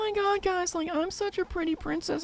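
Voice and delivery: put-on very high, soft, girly princess voice. Speaker imagines faking a female voice to fool everyone: girly female voice. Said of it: "you're using a voice like".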